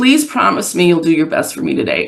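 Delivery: tearful, weeping, frightened pleading with swooping pitch. Retelling a handcuffed young client's words at arraignment: imitating a weeping, afraid plea. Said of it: "weeping, ashamed, disappointed in himself, and very afraid".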